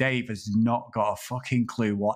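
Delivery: ordinary delivery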